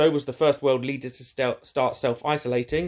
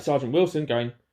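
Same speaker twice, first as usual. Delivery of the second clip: normal talking voice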